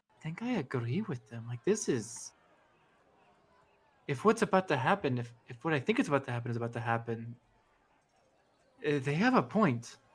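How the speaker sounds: hushed, private half-whisper. In a tabletop game, Kante leans over to Savara; half-whispering. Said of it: "she kind of whispers like".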